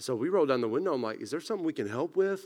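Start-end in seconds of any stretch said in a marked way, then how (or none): 1.2-2.4 mock confused and concerned, higher. Recounting police beating on the car window, retelling confused concern. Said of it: "genuinely like confused and concerned".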